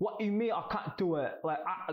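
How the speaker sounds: high, horrible impersonation voice. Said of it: "that's how he talks".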